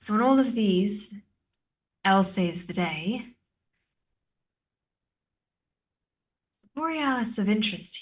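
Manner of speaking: confiding aside, plain conversational tone. Missus Q looks back over at you and speaks quietly under her breath. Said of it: "under her breath, very quietly, she goes".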